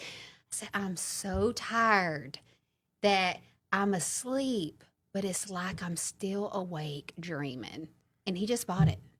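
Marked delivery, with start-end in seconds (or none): 0.7-7.9 very slow, deliberate, drawn-out delivery. Retelling what they told him to make him believe it, talking really slow. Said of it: "I started talking real slow".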